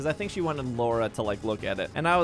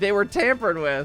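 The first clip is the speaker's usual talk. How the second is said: ordinary talk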